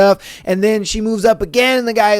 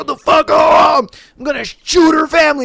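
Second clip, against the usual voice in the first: mock, high, unhinged, furious angry outburst; 6 semitones higher than usual. Imitating someone crashing out: imitating someone crashing out. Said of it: "crashing out and be like".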